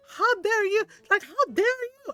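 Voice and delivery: put-on sputtering outburst. Retelling how an aunt reacted: imitating someone sputtering.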